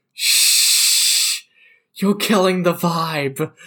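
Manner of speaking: mock-drunken speech with shushing. Describing leaning over to him to hush him, with mock-drunken shushing. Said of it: "just like drunkenly go".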